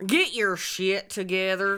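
put-on rural Southern US accent. Repeating another speaker's Scottish-accented line in a comedy bit; redneck accent. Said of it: "You fucking stole my Scottish".

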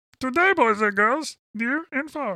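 very high, squeaky puppet frog voice. Addressing boys and girls near and far, use kind of a Kermit the Frog voice. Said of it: "that's kind of your Kermit the Frog voice".

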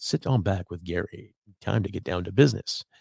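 smooth, sultry, seductive late-night radio DJ voice. Saying a line about sitting back with Gary, sexy radio voice. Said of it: "Get into my sexy radio voice and say".

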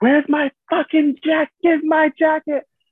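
put-on shrill scream, very high and drawn out. Retelling how a passenger demanded his jacket: imitating someone screaming. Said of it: "He was screaming".

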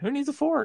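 bone-dry throwaway, pitched very high. Retelling a line said dead serious: imitating a deadpan line.

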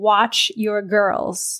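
looming, daunting, resounding voice with echo. Retelling a dream where great-grandma speaks: imitating Gigi's daunting voice. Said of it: "in a very, like, daunting voice".

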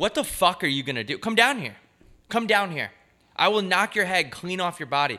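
high, challenging, defiant yell. Recounting an encounter with some dogs, retelling yelling at dogs. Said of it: "i'm yelling at them and i'm saying come down here".

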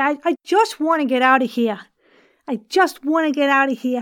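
put-on New York accent. Demonstrating accents on one practice sentence, now in a New York accent. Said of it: "Let's do some New York".

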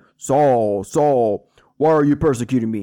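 slow, drawn-out, divine voice from heaven. Reading how Saul heard a voice from heaven on his way: God voice. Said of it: "That's my God voice".

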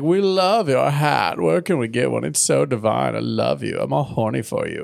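put-on snobby voices. Retelling how two characters come over to them, Jet Set and Upper Crust impression. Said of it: "they come over like".

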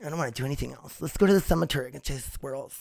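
put-on diva-style dog character voice. Speaker gives her dog a voice of its own, voicing her dog. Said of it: "That's her voice I gave her".

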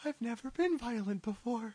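timid nervous voice. In a comedy sketch, a character being coached, sounding nervous. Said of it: "On this episode, 5 yr old [name] delivers a symposium on advanced scientific topics, nervous [name] gets woman tips from Big Bavino, and two guys try to get sued".

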